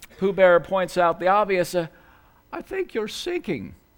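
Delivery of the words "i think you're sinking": soft, slow, half-yawning voice. Narrating a story, Pooh Bear speaks to the sinking Eeyore: almost yawning. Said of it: "with almost a yawn".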